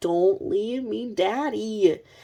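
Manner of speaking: put-on very slow, drawn-out, tearful crying child voice. Retelling a child begging her dad not to leave: imitating a crying child. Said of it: "She's crying, crying, crying, like".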